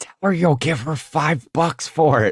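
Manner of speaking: stage whisper, loud. Walking past at a sale, the speaker coaches a kid on his offer, loud whisper. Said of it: "like in a loud whisper, I go".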